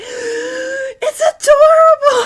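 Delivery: piercing squeal, very high and very loud. Voicing a small creature thrilled by a shirt: high-pitched squeal. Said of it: "high-pitched squeal come from the Lintet".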